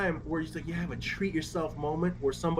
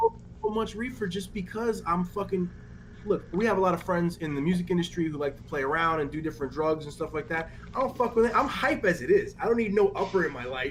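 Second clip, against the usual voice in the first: usual speaking voice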